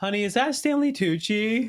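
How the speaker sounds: put-on loud tipsy speech. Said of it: "I'm speaking pretty loudly 'cause I'm a little tipsy".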